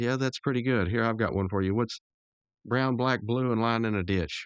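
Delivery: ordinary delivery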